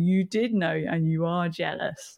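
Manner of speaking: put-on laughing voice. Retelling what she said to him about his detecting, retelling her laughing at him. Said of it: "She starts laughing at him".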